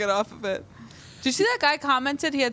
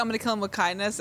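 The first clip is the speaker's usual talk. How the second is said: ordinary talk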